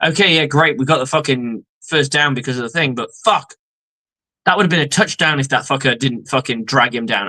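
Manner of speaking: usual speaking voice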